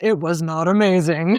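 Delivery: put-on voice-over narrator delivery. Retelling a story with a cohost, joking: narrator voice. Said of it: "Narrator voice".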